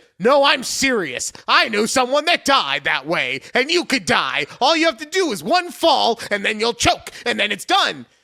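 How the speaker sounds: high, loud, stern serious voice. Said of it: "talking to me in a very stern tone".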